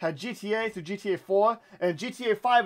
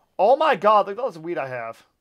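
ordinary talk, nothing marked

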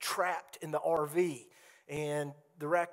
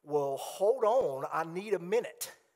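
put-on dismissive, brushing-off teenage girl voice. Speaker retelling what a teenage girl said when told to go inside, teenage-girl voice. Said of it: "only the voice that a teenage girl can say it in".

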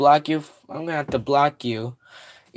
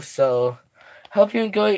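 voice cracking up high mid-line; 5 semitones higher than usual. Ending the live stream for now, the streamer signs off to viewers, voice cracking. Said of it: "Voice crack".

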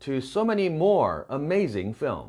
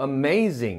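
amazing with punched ma and nasal zing. English pronunciation lesson: stress on ma, nasal zing. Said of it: "may에 왕창 띄워주시고요. 끝소리가 zing이죠, zing. 콧소리예요".

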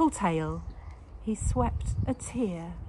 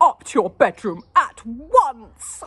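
very loud, commanding, with once stretched out; 5 semitones higher, 12 dB louder than usual. Mrs. Larrabee speaks to Lara after the orchid is ruined, ordering. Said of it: "ordered Mrs".

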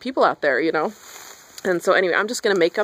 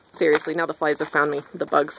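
ordinary delivery

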